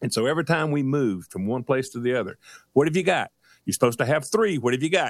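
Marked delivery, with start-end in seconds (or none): 2.7-5.1 put-on nagging, pestering, insistent repetitive tone. Retelling how his wife kept checking the bags: imitating his wife nagging. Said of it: "my wife is on me constantly".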